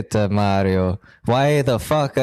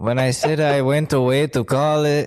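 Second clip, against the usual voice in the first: put-on Mexican accent. Playing a character in an improvised bit, in a fake Mexican accent. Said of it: "why am I doing that Mexican accent now?".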